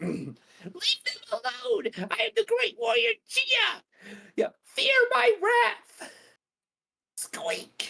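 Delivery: very high, swooping squeaky voice. Speaker does the voice of the great warrior Gia again: squeaky high Gia voice. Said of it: "This is about as high as I can get".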